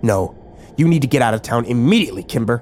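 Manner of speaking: ordinary delivery, nothing marked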